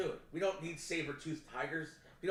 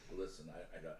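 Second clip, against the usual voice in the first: mock voice, much lower in pitch, with laughter. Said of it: "was like".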